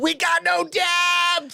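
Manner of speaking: very high, very slow, loud drawn-out yell. Retelling how a co-host yelled about the offensive line: imitating someone yelling. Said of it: "Anth was yelling at me that we have no depth".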